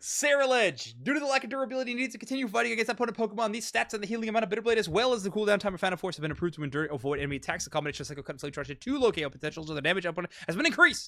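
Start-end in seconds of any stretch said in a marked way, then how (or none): 1.0-11.1 rattled-off, very fast, rapid-fire reading. Reading pokemon balance-change notes aloud and committing to the bit: reading very fast. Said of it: "started reading fast".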